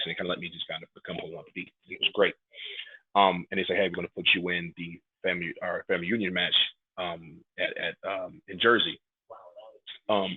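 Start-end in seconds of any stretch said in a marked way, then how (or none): none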